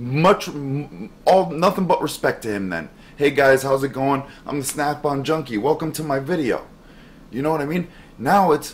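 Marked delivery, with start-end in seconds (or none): 3.2-6.7 mock polite, courteous voice. Retelling how a YouTuber opened his very first video: imitating a YouTuber's friendly intro. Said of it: "go back to his very first video".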